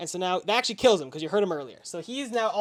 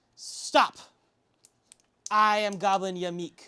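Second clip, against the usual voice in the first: every word dragged out, chieftain-style. The game master voices a goblin man who steps forward to the party: Goblin Yamik voice. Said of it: "I am Goblin [name]. / this goblin man steps forward. / leader of / pitched too goblin".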